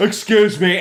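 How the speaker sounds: put-on high, resounding, echoing amplified voice. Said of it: "it, like, echoes and, like, it, like, rattles glass".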